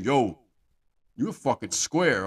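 put-on slow, aggressive, combative masculine jeer. Describing what turns men off, imitating an aggressive masculine tone. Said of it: "You think he wanna hear".

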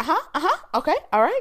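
put-on high, loud, bubbly girl voice. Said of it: "So it's not even like".

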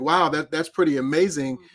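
ordinary delivery

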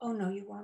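plain, even, clear, matter-of-fact, no emotion, acted. Recounting a voice they heard, the speaker quotes it in a matter-of-fact, clear voice. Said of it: "a very matter-of-fact, clear voice that said".

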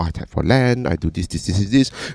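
quiet, soft, low-key murmur. Retelling how the other players talked during their game: imitating quiet players.

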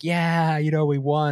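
mock screaming, high-pitched. Retelling what a bleeding rider said on the team radio: imitating someone screaming. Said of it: "he's just screaming into the team radio".

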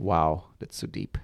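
sarcastic delivery. Reacting to another speaker's remark about regret: sarcastic tone. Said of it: "in a very sarcastic way with a tone".

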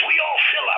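angry, very high-pitched voice. Retelling what the desk clerk said when asked for another room: imitating an angry reply. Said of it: "he very angrily says".

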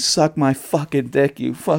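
play-acted, mild, held-back scream. Retelling what they screamed in a hospital elevator: imitating own screaming. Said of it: "He said I just started screaming".

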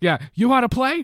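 put-on very loud, high New York accent. Imagining a film role played by Al Pacino: Al Pacino New York accent. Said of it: "in his New York accent".

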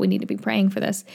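normal talking voice

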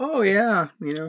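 high, breezy, nonchalant, cavalier cab driver voice.

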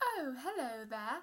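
refined British shopkeeper voice. Playing the lady at the protractor store greeting a customer: [name]'s refined British accent. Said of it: "British accent and went to Harvard".

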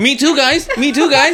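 very high, loud, eager voice. Mocking another speaker who wants to join in: imitating someone eager to join in. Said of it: "This guy just wants to join in".

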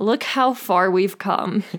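dry, sarcastic, ironic tone. Narrating history, commenting on complaints unchanged a century later: sarcastic. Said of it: "Gotta be sarcastic".

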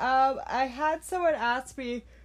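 talking through a yawn. Updating viewers on the studio, the speaker is tired and yawning while talking. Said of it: "sorry I'm yawning so much".

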